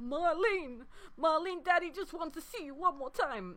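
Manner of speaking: put-on gruff character voice. Quoting a game character's line about his daughter: Barrett impression. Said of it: "a sterling Barrett impression there".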